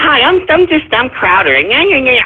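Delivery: fruity put-on voice lacking bass. Complaining that you dislike how he sounds, mimic his introduction in a fruity Crowder impression. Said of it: "he just sounds fruity ... grow some goddamn bass in your voice".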